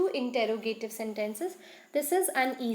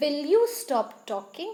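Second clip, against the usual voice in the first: firm, steady, no-nonsense delivery; 2 semitones higher, 3 dB louder than usual. Demonstrating how a command becomes a question for learners, in a firm tone. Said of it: "in a firm tone".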